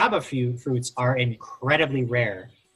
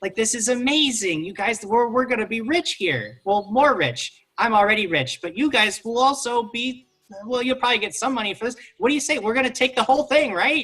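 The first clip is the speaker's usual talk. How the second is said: thrilled, bubbling over, super excited high voice; 9 semitones higher than usual. A character talking to the group, super excited. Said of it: "he's like super excited".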